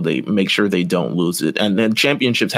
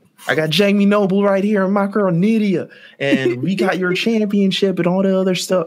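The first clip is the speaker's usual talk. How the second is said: much higher, bragging country thug voice. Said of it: "Country thugs".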